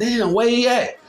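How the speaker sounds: put-on high-pitched, shrill, yelling shout. Retelling what happened after shots rang out, the speaker imitates people yelling. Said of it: "you just hear people yelling from everywhere like".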